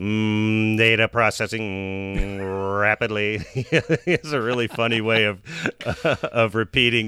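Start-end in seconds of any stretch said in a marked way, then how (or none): 0.0-3.4 mechanical voice with rolled R's, higher, slower. Describing how his line reading has progressed, imitating him with rolled r's. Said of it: "sort of rolls his R's and goes".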